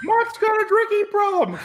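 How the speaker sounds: squeaky, very high ventriloquist dummy voice. A ventriloquist's puppet buddy speaks up in the conversation, ventriloquist dummy voice. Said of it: "Did you see my lips move?".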